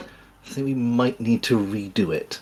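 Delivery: soft mutter under the breath, to oneself. A player's character looks up at a giant painting, muttering under his breath. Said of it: "quietly under his breath be like".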